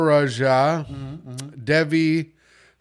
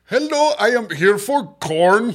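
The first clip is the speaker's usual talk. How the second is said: Indian accent blended with an Indiana accent; 6 semitones higher than usual. Asked to try it, doing an Indian guy doing an Indiana accent. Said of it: "an Indian guy do an Indiana accent".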